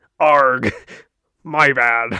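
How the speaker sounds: clumsy fake pirate accent, very loud. Asked if they abandoned the pirate accents, a host answers in a bad pirate accent. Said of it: "I don't even know if this is a pirate accent".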